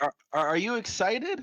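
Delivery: very high, stammered, loud yell. In character, asking a room of people if they're excited: yelling to a room. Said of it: "You're yelling at a room full of people".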